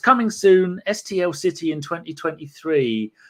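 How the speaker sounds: normal talking voice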